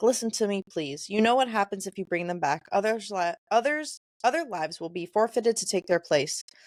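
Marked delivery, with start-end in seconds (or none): none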